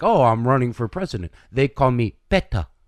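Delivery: put-on condescending voice. Retelling how Beto introduced himself to a barber: imitating Beto, condescending and arrogant. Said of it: "He said it like that".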